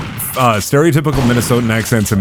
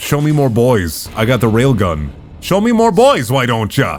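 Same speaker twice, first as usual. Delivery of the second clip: swooping Minnesotan accent. A player with a railgun taunts during the game, in a Minnesotan accent. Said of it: "I was doing a Minnesotan accent".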